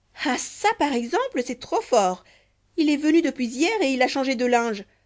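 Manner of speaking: sudden outburst, exclaiming, crying out. Narrator reads a woman's words on entering the bedroom, exclaiming. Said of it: "elle s'écria".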